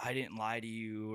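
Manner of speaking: put-on crying, tearful voice. Retelling a character's confession scene in a mental hospital: imitating someone crying. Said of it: "crying and she's like".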